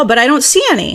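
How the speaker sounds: fast, doubting complaint. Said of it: "you go".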